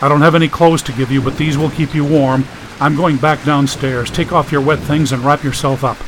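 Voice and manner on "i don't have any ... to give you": usual speaking voice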